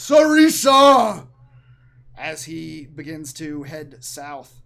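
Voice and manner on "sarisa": very loud, high-pitched, far-carrying shout. Voicing a giant king calling out a name: character yelling. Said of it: "Hekaton yells out now".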